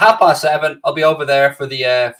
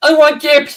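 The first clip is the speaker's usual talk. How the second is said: put-on very high, loud, big baby-like child voice; 13 semitones higher, 6 dB louder than usual. Recalling answering questions at a restaurant in a big child voice. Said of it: "I just come out with a big child voice like that".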